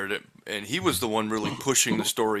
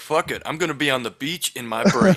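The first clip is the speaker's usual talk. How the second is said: usual speaking voice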